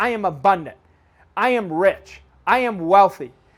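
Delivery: heartfelt, with real feeling and conviction. Leading listeners in repeating affirmations: with feeling and conviction. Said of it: "But I want you to feel it".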